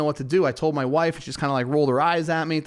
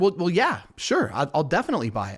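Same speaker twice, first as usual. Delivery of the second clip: usual speaking voice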